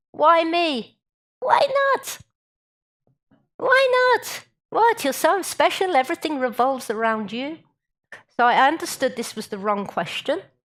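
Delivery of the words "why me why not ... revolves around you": high, put-on Yiddish accent, retorting tone. Telling a saying about God's answer to 'why me', in a Yiddish accent. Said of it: "you have to do it in a Yiddish accent".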